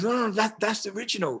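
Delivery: high-pitched put-on Korean accent. Curator quoting a woman pointing at a piece, in her Korean accent. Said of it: "in her Korean accent".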